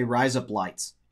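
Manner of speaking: Australian vowels on razor blades. Demonstrating how a phrase sounds in an accent: australian accent. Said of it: "If you want to say razor blades with an Australian accent, you say".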